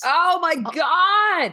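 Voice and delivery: excited shout. Answering another speaker who mentions a favorite movie: excited yell. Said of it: "don't mean to yell".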